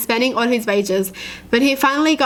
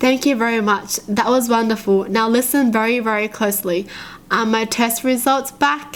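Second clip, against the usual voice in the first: plain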